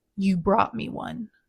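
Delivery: put-on deep voice. Retelling what she said while walking toward the speaker: imitating a deep voice. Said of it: "in that deep voice".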